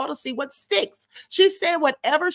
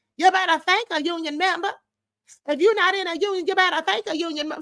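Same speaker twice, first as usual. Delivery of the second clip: fake, put-on slangy vernacular dialect; 3 semitones higher than usual.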